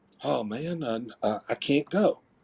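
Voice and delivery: slow, halting, stammered, hushed half-whisper. Retelling someone's answer on a phone call: imitating a half-whisper. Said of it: "he sort of whispered".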